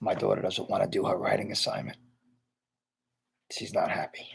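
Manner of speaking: whispered, very soft, hushed and breathy. A caller just welcomed on air, whispering so his daughter won't hear. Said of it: "I'm only whispering".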